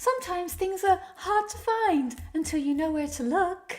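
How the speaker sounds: very airy, high, fairy-like voice. Reading a female character's line aloud, in an airy fairy voice. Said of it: "She's got a very airy fairy voice".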